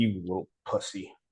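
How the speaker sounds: soft, indistinct mumble under the breath. Retelling talking trash to oneself before the early gym: imitating own mumbling. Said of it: "it's just mumbling".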